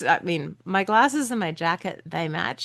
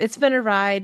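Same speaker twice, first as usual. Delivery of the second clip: ordinary delivery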